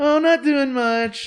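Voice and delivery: very high, drawn-out flirty talk. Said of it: "she starts talking all flirty".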